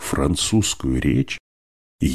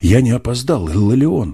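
merry, glad, cheerful, high-pitched exclamation; 8 semitones higher, 4 dB louder than usual. The narrator, running into the room, calls to Illarion with a cheerful exclamation. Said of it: "весело воскликнул я".

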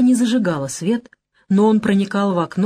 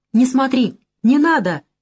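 frightened, high, scared shout; 5 semitones higher than usual. Svetlana cries out behind the narrator as he looks at the photo: frightened shout. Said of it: "испуганно крикнула".

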